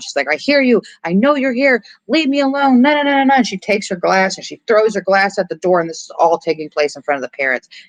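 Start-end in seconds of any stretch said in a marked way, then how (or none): 0.3-3.3 put-on very high, frantic, freaked-out panicked shrieks. Retelling a scene where she hears banging no one else hears: imitating panicked screaming. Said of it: "she starts screaming. She starts just panicking and freaking out".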